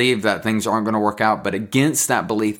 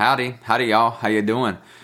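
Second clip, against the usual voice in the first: hammed-up, playful Southern North Carolina accent. Greeting listeners down south: playful North Carolina accent. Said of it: "Bring out some of that North Carolina accent".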